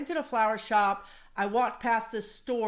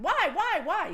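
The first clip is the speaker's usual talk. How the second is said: put-on higher, childlike, pestering kid voice; 8 semitones higher than usual. Told no without explanation, the speaker keeps asking why, like a kid asking why. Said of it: "so I'm like the kid".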